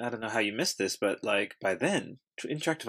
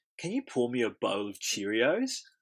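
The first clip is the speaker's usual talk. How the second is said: put-on Australian accent. Asked to say a phrase, the speaker tries it in an Australian accent. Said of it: "I'll just say it in Australian".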